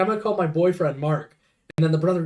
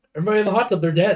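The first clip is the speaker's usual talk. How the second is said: put-on unfazed, nonchalant deadpan delivery. Retelling a movie scene where a character reports everyone dead: imitating an unfazed deadpan delivery. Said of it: "not even phased".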